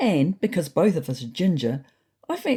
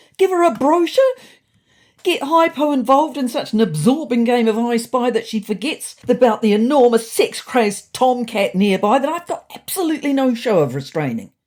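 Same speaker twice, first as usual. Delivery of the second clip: increasingly frantic, hysterical, higher and louder; 6 semitones higher, 5 dB louder than usual. Reading a story aloud, the narrator protesting a request: growing more hysterical. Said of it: "my voice growing more hysterical".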